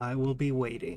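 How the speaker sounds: hissing non-human voice. The game master voices a mysterious voice in a character's head, sibilant and inhuman. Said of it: "a certain kind of like a sibilance to the voice".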